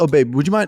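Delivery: relaxed, easygoing, casual, offhand. Explaining how the tone of a pet name matters, said casually. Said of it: "it's a casual, like".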